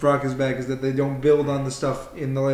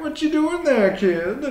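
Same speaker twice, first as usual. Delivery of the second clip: put-on silly, funny voice, higher pitch; 13 semitones higher than usual. Mimicking how the other speaker just sounded: imitating a funny voice. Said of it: "it was like".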